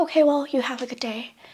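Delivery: put-on pointed, passive-aggressive tone. Retelling what he said on getting back to his place: imitating a passive-aggressive goodbye. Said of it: "Passive aggressively".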